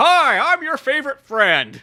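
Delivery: very high, loud on-air news-anchor voice. Describing a guy who changes once he's on the air; news anchor voice. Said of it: "one of those like news anchor guys".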